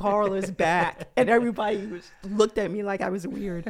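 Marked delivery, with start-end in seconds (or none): none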